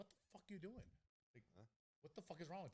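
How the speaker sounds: yelled cuss-out, high-pitched. Retelling how they cussed out a player who messed up a route: imitating yelling at a player. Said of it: "kinda talking like how I would go".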